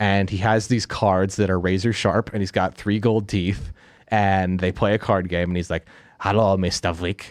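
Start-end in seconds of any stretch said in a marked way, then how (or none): 6.2-7.3 put-on German accent, slower. Retelling a card-game scene where a very large man speaks, in a put-on german accent. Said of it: "He's got a German accent".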